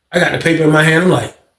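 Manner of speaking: ordinary talk, nothing marked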